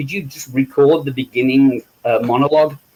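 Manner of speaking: ordinary delivery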